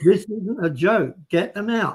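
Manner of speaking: insistent, pressing, urgent screaming voice. Retelling a work-day argument, voicing a woman screaming at him: retelling a woman screaming. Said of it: "She's screaming at him".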